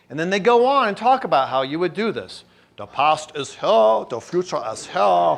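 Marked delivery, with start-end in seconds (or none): 2.7-5.4 best-attempt put-on German accent. Speaker reads out a quoted passage, in a German accent. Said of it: "that's the best German accent I can do".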